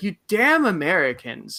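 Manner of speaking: furious, high-pitched, swooping angry exclamation. Retelling a group talk, the speaker quotes the Italian guy: imitating an angry man. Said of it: "the Italian guy immediately got so angry".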